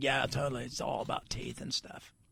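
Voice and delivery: low, whispered surfer-dude voice. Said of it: "He's like".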